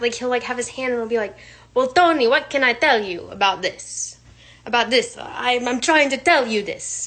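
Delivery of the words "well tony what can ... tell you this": loud, fake Italian accent, laid on thick. Retelling how someone talks to an italian client: imitating someone's put-on italian accent. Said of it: "takes on an Italian act".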